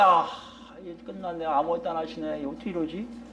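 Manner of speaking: despairing murmur.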